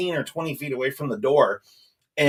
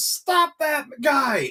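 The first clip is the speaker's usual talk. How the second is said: very high, shrill, alarmed yell; 12 semitones higher than usual. Retelling a Pizza Hut manager running out the door: imitating a manager yelling. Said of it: "she yells and says".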